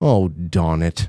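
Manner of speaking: barely-there, very soft, hushed aside. Retelling how she reacted to the photo, imitating her saying it softly. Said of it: "you can hear her say it very, very, uh, softly".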